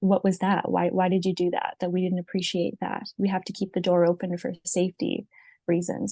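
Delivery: ordinary delivery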